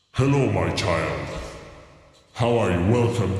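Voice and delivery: grand booming put-on voice. Speaker greets the listener while doing the voice of God. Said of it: "This is [name] doing the voice of God".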